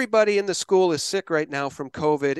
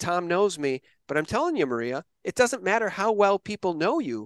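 ordinary talk

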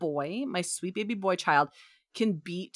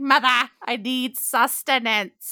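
put-on slow, drawn-out goblin-child voice; 5 semitones higher, 7 dB louder than usual. Retelling how the son greets the speaker: imitating son's goblin-like voice. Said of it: "he's like a goblin child".

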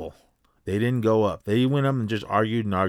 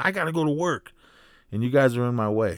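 put-on male yelling with a light edge; 3 semitones higher than usual. Retelling what a man blocked on the road yelled: imitating a man yelling. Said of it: "one guy was even yelling".

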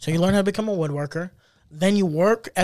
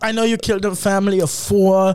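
put-on German accent, laid on thick. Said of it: "your German accent sounds evil".

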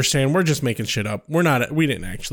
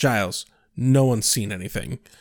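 put-on deadpan, much lower; 5 semitones lower than usual. Recapping a scene where Buffy answers Giles, imitating Buffy's deadpan. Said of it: "Buffy just deadpans".

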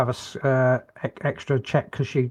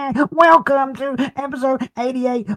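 put-on very high baby-talk voice; 13 semitones higher, 4 dB louder than usual. Opening episode 88 of the show, baby voice impression. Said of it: "That's my baby impression".

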